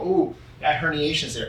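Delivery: plain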